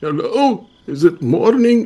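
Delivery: put-on old man voice, slow and high. Playing a character just woken by a visitor: old man voice. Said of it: "I continue my, my old man shtick".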